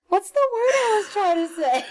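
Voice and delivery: speaking through laughter. Trying to remember a word mid-conversation, laughing while talking. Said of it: "I'm laughing so hard".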